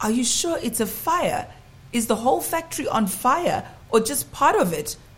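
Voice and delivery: high-pitched, incredulous tone, unable to accept it. Woken by a security guard's phone call, the narrator replies disbelieving. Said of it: "I asked disbelievingly".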